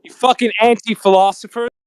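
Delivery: very angry. Arguing with others who say the Earth is not a ball: very angry. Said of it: "Why is he so angry?".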